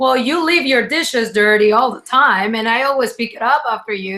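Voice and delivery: ordinary talk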